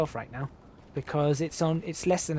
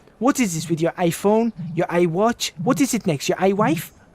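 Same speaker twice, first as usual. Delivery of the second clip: put-on French virtual assistant voice, higher, louder; 3 semitones higher, 6 dB louder than usual. Retelling a comedian's bit: French Siri voice. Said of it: "and she goes".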